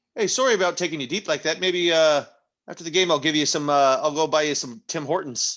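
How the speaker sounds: put-on Canadian accent. Apologizing to a fellow player during a game: Canadian accent. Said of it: "Canadian accent".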